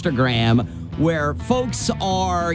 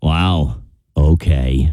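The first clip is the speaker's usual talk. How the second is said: disappointed, let-down tone; 13 semitones lower, 6 dB louder than usual. Performing the trend's second take of the phrase: disappointed.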